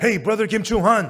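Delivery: put-on loud calling shout. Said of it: "I shouted".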